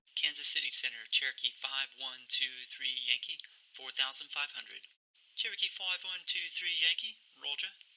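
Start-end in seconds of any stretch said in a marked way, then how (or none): 5.4-7.7 acted British accent, higher pitch. Demonstrating a Center controller's radio reply to a pilot, in a British accent. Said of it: "you're getting my very best British accent".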